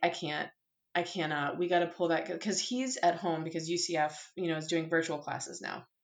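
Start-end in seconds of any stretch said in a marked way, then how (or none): none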